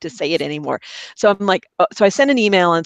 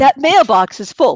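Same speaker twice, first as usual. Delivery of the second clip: high, loud, slow mock recorded-message voice. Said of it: "literally, it's a noise".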